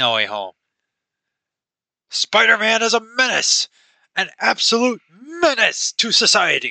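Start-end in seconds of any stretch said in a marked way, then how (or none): 2.1-6.7 put-on gruff character voice. Before switching to anime, speaker launches into a J. Jonah Jameson voice. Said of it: "my probably horrible J. Jonah Jameson voice".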